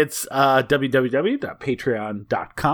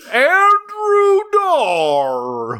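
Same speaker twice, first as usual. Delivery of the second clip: very high, loud, sing-song country bear voice; 5 dB louder than usual. Taking turns calling out names, saying one name in a country bear voice. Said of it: "Why did you turn into a country bear?".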